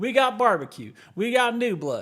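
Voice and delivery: put-on heavy Texan accent. Pitching a pretend QuakeCon commercial to a co-host, exaggerated Texan accent. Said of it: "put on like a little bit more of an accent".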